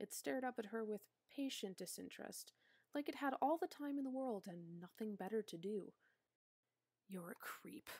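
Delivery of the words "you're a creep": quiet, muttered under the breath to herself. Narrator reads Katla speaking to the dog staring up at her, muttered. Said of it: "Katla muttered".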